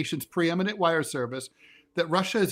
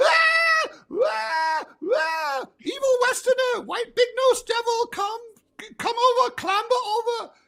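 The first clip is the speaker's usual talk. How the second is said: mock screaming bloody murder, very high-pitched and shrill; 4 dB louder than usual. Retelling how a woman screamed as he clambered over the counter, retelling her scream. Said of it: "she's screaming bloody murder".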